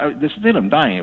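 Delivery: ordinary talk, nothing marked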